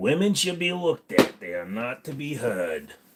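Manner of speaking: silly, mocking, stupid put-on voice. Joking to viewers, saying lines in a stupid voice. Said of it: "If I say it in a stupid voice".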